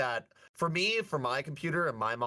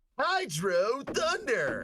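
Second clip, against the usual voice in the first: high, swooping game-announcer style call; 8 semitones higher than usual. Echoing the game's title as it starts: imitating the game announcer. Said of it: "you gotta say it like the announcer".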